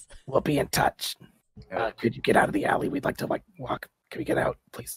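rough, rasped-out lines in a raspy voice. Voicing a character who addresses the players in a role-play scene; raspy voice. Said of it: "She rasps out".

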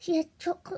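ordinary delivery

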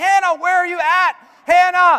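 very loud, shrill yelling out. Father retelling calling out for his daughter hannah, retelling yelling out. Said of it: "I'm just like yelling out to her".

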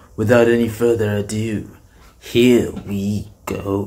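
proud, announcing cartoon prince voice. Starting a reaction video, saying the intro in a Prince Vegeta voice. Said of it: "let me say it like Prince Vegeta".

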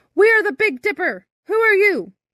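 very high-pitched loud shouting. Narrator reads a ship captain answering Birdling from the bow, shouting back. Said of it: "stood up in the bow and shouted back".

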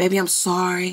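deep, soft, tender, put-on loving voice. Imitating how a man talks to you, put-on deep loving voice. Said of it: "Give you this real deep loving voice".

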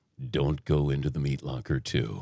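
very low, deep horror trailer narration voice. Asked to do a horror movie thing, the speaker performs in horror movie trailer voice. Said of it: "Can you do a horror movie thing?".

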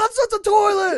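very high, shrill, screaming shout. Retelling how Mom reacted when a sleepwalking buddy came into her room, imitating Mom yelling. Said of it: "just yelling".

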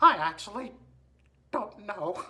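soft cartoon mouse character voice. In game voice chat, asked their age, answering in a Mickey Mouse voice. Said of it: "Hi everybody. It's me, [name]".

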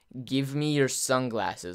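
menacing, hostile, very angry and intimidating. Retelling how she demanded the speaker's sunglasses: mock-angry, intimidating demand. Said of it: "in a real angry, intimidating manner".

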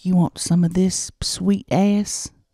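put-on whisper. Acting out a hypothetical night for another speaker: acting out a whisper. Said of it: "And I'd whisper in your ear".

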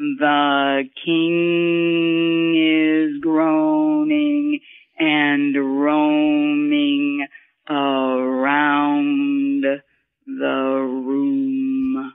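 lowest note placement, deepest vocal register. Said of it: "the lowest note".

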